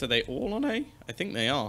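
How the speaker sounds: voice cracking way up. Commentator calling a match as players move to a site, voice cracking. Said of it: "a little bit of a voice crack there".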